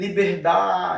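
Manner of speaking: da in liberdade stressed and lengthened. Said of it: "essa sílaba dá, aí eu prolongo um pouco mais".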